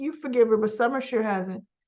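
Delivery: ordinary delivery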